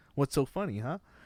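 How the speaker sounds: confrontational, mob tough-guy manner. Retelling a scene from a movie, imitating a Goodfellas moment. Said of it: "Goodfellas, like, moment where he's like".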